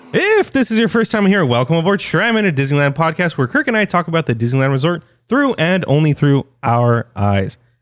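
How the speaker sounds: rapid delivery, all in a single breath. Podcast host reading the show's intro to listeners, fast, all in one breath. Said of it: "Did that in one breath".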